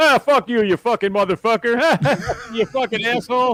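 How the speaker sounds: very high, loud swearing rant. Retelling the midday guy's hot-mic rant at a salesman: imitating the midday guy's hot-mic rant. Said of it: "you hear him going, right on mic, going".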